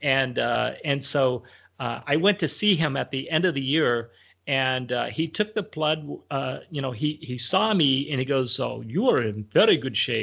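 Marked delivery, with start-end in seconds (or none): 8.6-10.2 put-on Romanian accent in English. Retelling what the doctor said at a checkup: imitating a Romanian doctor's accent. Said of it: "he kinda talks like this".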